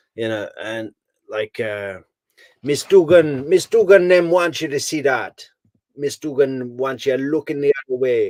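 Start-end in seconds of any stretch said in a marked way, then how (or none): 2.7-8.4 put-on Jamaican accent, pitched up. Quoting a lawyer's cross-examination at trial: Tara Kawas's Jamaican accent. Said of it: "she's got this fantastic Jamaican accent".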